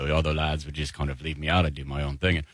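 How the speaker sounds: put-on low-pitched Liverpool accent. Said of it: "George is more like down here".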